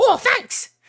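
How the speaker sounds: shrill little bird voice. Voicing a crow that flops down to take berries: voicing a crow. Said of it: "this crow flops down and goes".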